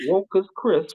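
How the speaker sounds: put-on British accent. Told to say it in a very British accent, the speaker tries a very British accent. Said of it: "you've got to say it in a very British accent".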